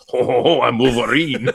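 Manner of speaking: put-on French accent. Describing how a woman's Australian accent turned into a French accent; put-on French accent. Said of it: "turned into a French accent".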